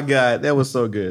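ordinary delivery

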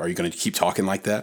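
normal talking voice

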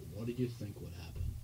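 hushed, very quiet, dead-level flat monotone drone. Retelling how John Davis looked at the kids making bowls; John Davis monotone impression. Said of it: "he'd always have this very monotone voice".

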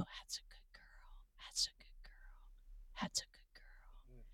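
slow, very quiet, soft, close whisper. Showing how the horse was soothed while it ate: reenacting whispering to a horse. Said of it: "whisper a sweet nothing to a horse".

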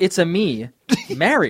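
sing-song, swooping pitch, words stretched out. Quoting the opening line of a video game: Mario voice. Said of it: "when he says".

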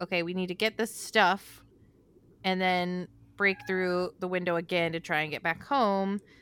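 ordinary delivery

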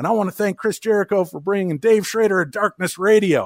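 easy Southern drawl. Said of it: "slipping into, like, his Southern cadence".

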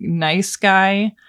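stressing the words "nice guy". Describing a horror movie's rich couple and their son, with emphasis on "nice guy". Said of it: "You can hear the emphasis I'm putting on that".

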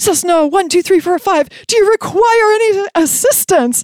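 high, panicked, anxious, alarmed radio-style voice. Imitating a controller who always thought it was an emergency, mock-panicked voice. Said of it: "they'd immediately say in a panicked voice".

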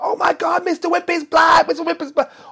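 put-on very high, shrill, alarmed shrieking of kids. Retelling a kids' party where a child saw the glove come off: imitating screaming kids. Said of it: "one screams, they're all screaming".

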